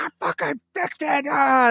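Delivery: put-on shrill, very high, joyful triumphant scream. Retelling the moment a repaired computer powered on: retelling a scream of joy. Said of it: "And I am screaming".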